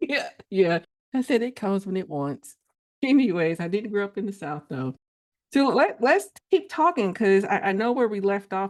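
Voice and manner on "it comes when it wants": ordinary talk, nothing marked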